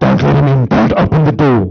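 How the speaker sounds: very deep, low, demonic man's voice. Retelling a possession, the speaker voices the demon speaking through a girl in a man's voice. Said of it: "it's a girl speaking with a man's voice".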